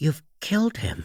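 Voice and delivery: quavering, unsteady, shaky, high-pitched voice. Narrating a standoff, a man speaks to the armed killer, in a shaky voice. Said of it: "in a shaky voice".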